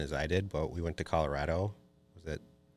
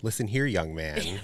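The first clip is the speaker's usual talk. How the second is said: put-on, scolding yell; 4 dB louder than usual. Retelling what they say when yelling at him: imitating own yelling. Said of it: "whenever I yell, yell at him".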